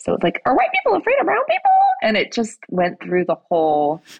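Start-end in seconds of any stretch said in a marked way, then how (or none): 0.4-1.7 quick, sweet little chirping voice, very high. Retelling what a man said on a quiet subway train, imitating a sweet little chirp. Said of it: "he said it in this like sweet little chirp".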